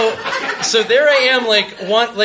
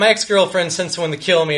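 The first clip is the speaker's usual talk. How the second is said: ordinary talk, nothing marked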